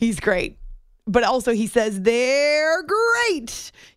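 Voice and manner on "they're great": high-pitched cartoon tiger mascot voice. Talking about famous mascot catchphrases, saying the line in Tony the Tiger voice. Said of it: "You have to say it like that".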